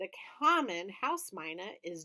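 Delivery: ordinary delivery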